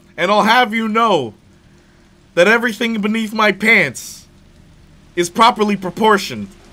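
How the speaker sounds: shrill, booming, high, huge monster voice. Carrying on the President Evil joke, speak as the big beastie in a Nemesis voice. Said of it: "the big beastie Nemesis".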